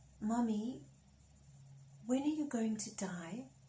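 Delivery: put-on whispering like a child. Retelling what a five-year-old son asked at the bedside: imitating a child whispering. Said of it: "He's whispering".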